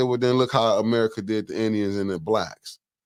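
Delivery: ordinary talk, nothing marked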